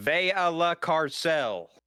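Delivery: Southern-accented broken Spanish. Saying the only Spanish phrase known: Spanish in a Southern accent. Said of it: "I only know how to say Spanish in a Southern accent and entirely broken".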